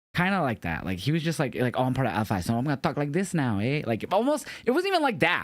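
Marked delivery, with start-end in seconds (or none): 1.6-3.9 mock, badly done put-on Spanish accent. Describing how a man's accent changed, in a bad Spanish accent impression. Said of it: "clearly using like a Spanish accent".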